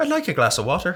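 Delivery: put-on Irish accent. Showing the other speaker a line in an irish accent. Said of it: "attempt an Irish accent".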